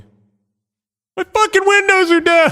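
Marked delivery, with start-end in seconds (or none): 1.1-2.5 high, loud, frantic yell. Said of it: "you can hear me just yelling".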